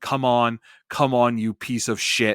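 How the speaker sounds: acted-out heckling, screaming, egging on. Retelling what someone in the crowd yelled during the match: imitating a crowd member screaming. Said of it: "you can hear someone in the crowd screaming".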